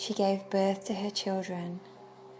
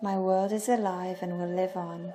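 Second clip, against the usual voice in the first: ordinary delivery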